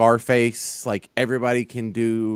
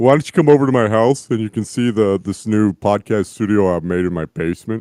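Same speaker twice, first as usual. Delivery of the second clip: put-on creepy killer voice, louder; 6 dB louder than usual. Doing a requested impression, inviting someone over: Buffalo Bill impression. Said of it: "I do Buffalo Bill".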